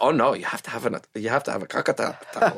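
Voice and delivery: put-on heavy Italian accent. Retelling a disagreement with Fran, imitating Fran's Italian accent. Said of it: "She's a heavy Italian accent".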